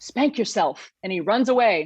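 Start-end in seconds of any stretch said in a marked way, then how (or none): 0.0-0.9 secretive, hushed whisper. Retelling what was whispered into the ear between songs: imitating a whisper. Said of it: "whispers into my ear".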